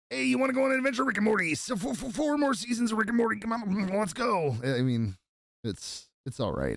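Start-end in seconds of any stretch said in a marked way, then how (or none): 0.1-4.5 high, cartoony character voice pushed up. Doing a Rick impression to close the season: Rick impression. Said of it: "that's better than that A I".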